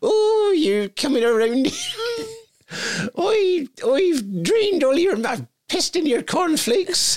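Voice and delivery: very high, drawn-out West Country accent. Retelling what he said, speaker attempts a high-pitched West Country accent. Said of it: "Can't do a high-pitched West Country accent".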